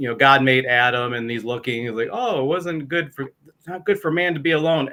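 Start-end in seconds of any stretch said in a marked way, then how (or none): 2.1-4.9 sarcastic, feigned surprise. Retelling a joke about Adam, quoting God: God in mock surprise, sarcastic. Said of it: "as if that were a surprise to God".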